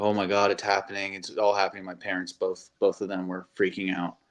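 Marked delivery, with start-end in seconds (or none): 0.0-1.8 mock tearful, crying voice. Retelling how a girlfriend reacted to a big league call-up: imitating girlfriend crying. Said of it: "She was crying, uh, eyes bawling".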